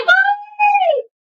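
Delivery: excited, very high, slow, drawn-out hello. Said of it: "Like in the circus".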